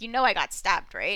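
put-on sarcastic tone. Recapping a story, acting out him asking her, retelling a sarcastic question. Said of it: "He's asking her like sarcastically".

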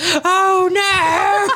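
very high, shrill, bad British lady accent. Retelling what a man said after loud crashing noises, in a horrible British woman accent. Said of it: "a man with a horrible British woman accent".

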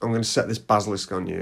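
ordinary delivery

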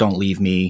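mock, put-on panicked voice. Retelling a film character's words while holding the baby: imitating a panicked plea. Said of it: "sense the panic in her voice".

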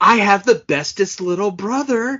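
relentlessly upbeat, hyper-positive, high, pitchy delivery. Quoting her line from a movie's opening credits, mock hyper-positive, pitchy voice. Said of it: "say in this hyper positive, pitchy voice".

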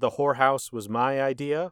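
ordinary talk, nothing marked

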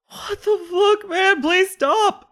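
sobbing, crying, very high-pitched begging voice. The game master voices an injured character holding his leg, crying while pleading.

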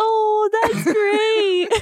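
very high, fake, put-on gushing enthusiasm. A speaker who says they lack an enthusiastic tone tries it: fake gushing enthusiasm. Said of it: "Pretend I'm Millie or Fluffy".

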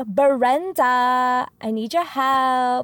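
very slow, attitude-heavy, pleading delivery. Retelling how a neighbor would come over asking for help: imitating a neighbor saying brenda with attitude. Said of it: "I'm trying to channel my neighbor".

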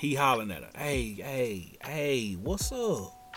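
put-on thick, heavy Southern accent.

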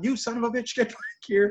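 mad, furious yelling at a high pitch. Recapping a scene where Jericho gets mad when a drone flies off, imitating Jericho yelling. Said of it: "He's yelling".

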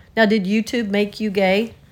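ordinary talk, nothing marked

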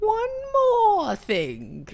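put-on Chinese accent, very high and swooping. Asked to say it as a Chinese uncle to his nephew, Chinese uncle character voice. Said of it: "say that as a Chinese uncle to his nephew, Jackie Chan".

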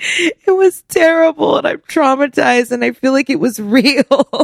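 nervous laughter through words. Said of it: "I'm laughing because I'm uncomfortable".

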